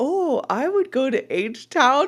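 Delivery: put-on German-accented English. Quoting a man from a story he's telling, in a German accent. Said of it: "but the German accent was".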